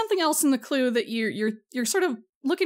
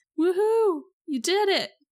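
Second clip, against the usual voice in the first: listless, delayed, limp, pitched-up half-hearted "woohoo"; 6 semitones higher than usual. Voicing Karen slowly raising her arms after the clue: limp, delayed cheer. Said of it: "slowly raises her arms up in kind of a limp fashion and goes".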